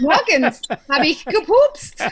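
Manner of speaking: laid-on, put-on German accent. Answering a mock german conversation: put-on german voice. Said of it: "y'all sound just like him".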